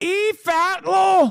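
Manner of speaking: high, slow mock Scottish accent, like a cartoon ogre.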